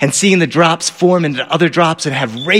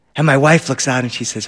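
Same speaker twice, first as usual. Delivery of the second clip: ordinary talk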